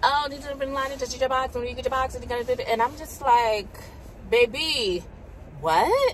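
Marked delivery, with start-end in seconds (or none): 0.0-2.1 much faster, higher and quieter rapid-fire talking. Acting out what a woman said to her, retelling rapid-fire talking. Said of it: "was just talk so fast".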